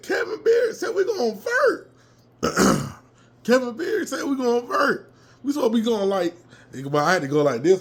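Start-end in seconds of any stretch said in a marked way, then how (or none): 0.0-5.1 put-on yell, much higher, slower. Recounting what he shouted to someone in a stadium, retelling a yell. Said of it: "I was yelling like hell".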